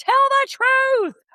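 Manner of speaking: put-on raspy, hoarse, very high shrieking scream. Recalling a flashback of a fight: imitating a hoarse scream. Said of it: "screaming in her hoarse voice".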